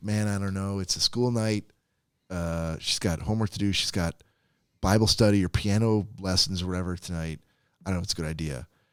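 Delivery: ordinary delivery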